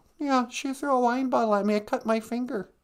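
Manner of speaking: high-pitched cartoon frog puppet voice. Calling in to a podcast as a caller on the line: Kermit the Frog voice. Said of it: "Kermit the Frog is, is on".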